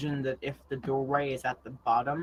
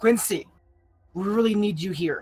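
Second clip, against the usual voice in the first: urgent, loud, pitched-up yell; 6 semitones higher, 6 dB louder than usual. Voicing a character who yells at a doorway for help: yelling in character. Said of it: "Verdant yells at the doorway".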